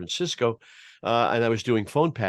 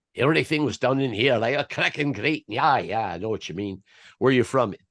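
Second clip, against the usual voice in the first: imitated Scottish accent. Retelling a hitchhiker's talk in the car: imitating a Scottish accent. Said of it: "he spoke in a Scottish accent".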